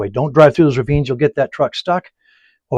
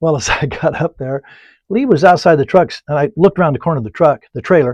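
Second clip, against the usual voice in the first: usual speaking voice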